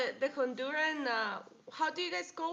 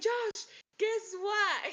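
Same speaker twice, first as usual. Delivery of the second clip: mock cheerful, happy voice, higher pitch; 7 semitones higher than usual. Retelling her own call to her partner, imitating her happy voice. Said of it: "I'm all happy".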